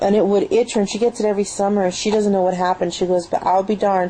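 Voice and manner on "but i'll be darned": ordinary talk, nothing marked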